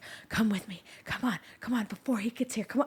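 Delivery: soft, close whisper under the breath. Speaker retells urging a man in a long hallway to come along, retelling a whisper. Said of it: "I'm like whispering to him".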